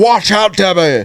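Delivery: shrill, very high, loud character voice. Showing how a script character named Brenda was voiced during read-throughs: Brenda character voice. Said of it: "she talks like this all the time".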